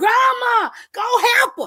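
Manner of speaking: mock very high, loud, piercing screaming shriek. Retelling how Mackenzie screamed at the TV: imitating Mackenzie screaming. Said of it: "She's screaming at the T V".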